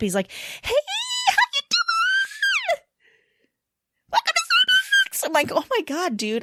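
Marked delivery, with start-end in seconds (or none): 0.3-5.3 way-up-high, forced-cheery, fake-friendly voice. Mimicking a Starbucks drive-thru worker's greeting, imitating a very high-pitched voice. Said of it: "he goes like fifteen octaves up".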